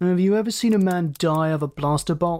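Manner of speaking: ordinary delivery, nothing marked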